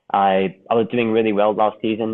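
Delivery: normal talking voice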